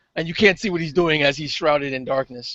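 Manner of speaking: plain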